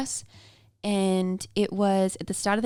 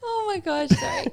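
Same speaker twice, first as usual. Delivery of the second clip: very high voice cracking up laughing mid-word. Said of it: "I'm gonna cry again".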